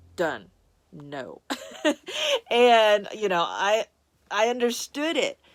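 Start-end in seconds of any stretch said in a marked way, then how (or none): 0.2-1.4 low, soft, very definite stern voice. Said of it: "It was just like".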